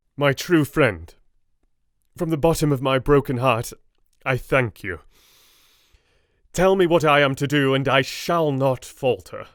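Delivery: brave, heartfelt voice. A brave lad with a broken heart answers his true friend, bravely. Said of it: "He stepped forward and said bravely, / He stepped forward and said bravely, though his hand trembled, and his face was as pale as snow, / - I read in "British English" (born in Yorkshire, northern Eng".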